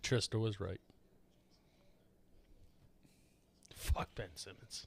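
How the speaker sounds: defeated, resigned, very quiet, breathy, near-whispered voice. Admitting another speaker was right about a player: defeated voice. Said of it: "that was so defeated in your voice".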